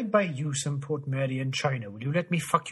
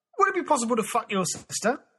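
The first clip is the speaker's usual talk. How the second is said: put-on Estuary English accent, pitched up; 9 semitones higher, 3 dB louder than usual. Running through uk accents in under 100 seconds, say this in an estuary english accent. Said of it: "Estuary English".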